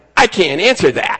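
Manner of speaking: put-on twangy voice. Retelling a woman's answer to the district attorney, imitating her twang. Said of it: "she says in her twang".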